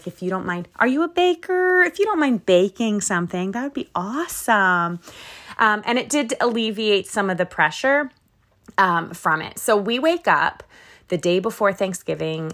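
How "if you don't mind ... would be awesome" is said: put-on sugary-sweet, overly polite asking tone. Speaker recounts asking people to bring homemade desserts: retelling a really sweet request. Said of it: "I said it in a really sweet way".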